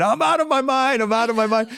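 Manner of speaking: high-pitched, all-out screamed delivery. Speaker recalls being shown jumping from the top of an arena, retelling a scream.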